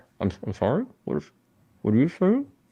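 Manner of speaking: muffled voice, as if speaking from under water. Playing Kane, answering someone whose words they can't understand: muffled underwater voice. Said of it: "it sounds like they're underwater".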